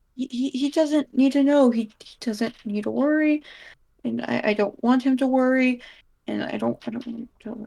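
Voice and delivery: deliberate, purposely mumbled speech. Asked why they fear Leo finding out, a deliberate mumble. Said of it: "I'm purposely mumbling these".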